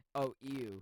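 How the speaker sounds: mock dismissive, disgusted "ew". Retelling how a commenter sounded: imitating dismissive disgust. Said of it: "He said it like it was like".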